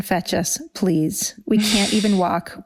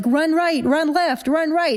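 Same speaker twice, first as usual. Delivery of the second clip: high-pitched shouting; 8 semitones higher than usual. Retelling how Canessa shouted directions at someone who could not see: imitating someone shouting. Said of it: "Canessa starts shouting at him".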